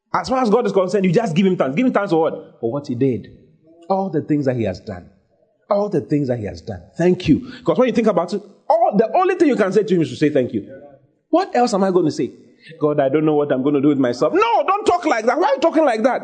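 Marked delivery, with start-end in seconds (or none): none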